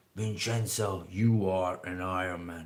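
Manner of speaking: very deep, slow finish-line announcer voice. Retelling what is said as you cross the Ironman finish line, imitating a very deep voice. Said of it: "there is very deep voice".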